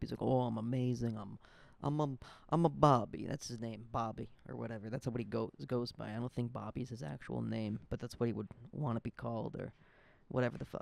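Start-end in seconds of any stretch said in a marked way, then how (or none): 0.2-3.3 louder, put-on Italian accent. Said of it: "I don't even know if I'm doing the Italian right".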